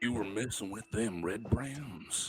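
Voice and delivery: big, rough, gruff bruiser voice. Voicing a character questioning travelers after locals attacked them: large gruff voice. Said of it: "You hear a large, gruff voice".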